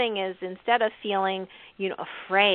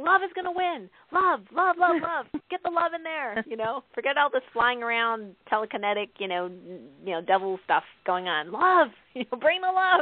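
acted shouting, higher pitch; 4 semitones higher than usual. Retelling watching a movie with James: retelling yelling at the TV. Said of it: "I'm yelling at the T V".

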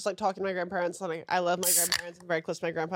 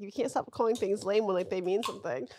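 ordinary delivery

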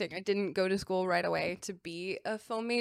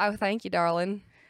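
playful put-on Southern accent. Thanking the other speaker for a compliment: put-on southern accent. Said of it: "I love your Southern accent".

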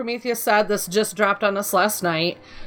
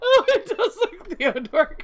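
talking through laughter, higher; 9 semitones higher than usual. Reacting to others saying the wings look like a toy: laughing while talking. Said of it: "I can't stop laughing now".

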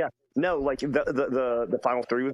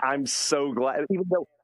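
usual speaking voice

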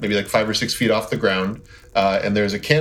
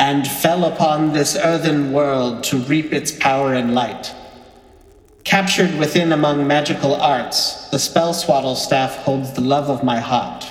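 resonating, disembodied voice resounding all around; 4 semitones higher than usual. Voicing a voice heard in a misty clearing: resonating voice. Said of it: "you hear a voice resonate".

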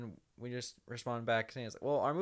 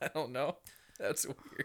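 normal talking voice

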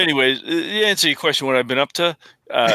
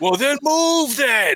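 put-on shrill, high, drawn-out grumpy old man holler; 10 semitones higher than usual. Speaker retelling stepping on the cat's tail: retelling yelling at a cat. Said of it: "I'm just yelling old man shit at cats".

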